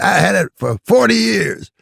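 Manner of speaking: very loud, very high, rough character voice, pushed hard. Retelling how Redd Foxx tried to sell him a watch: imitating Redd Foxx. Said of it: "He said".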